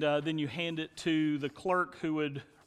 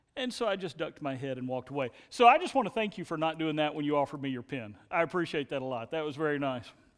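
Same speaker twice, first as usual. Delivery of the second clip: ordinary talk, nothing marked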